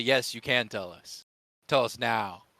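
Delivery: aggressive, forceful, pressing delivery. Acting out a demand that the uncle tell them: aggressive tone. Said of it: "an aggressive tone".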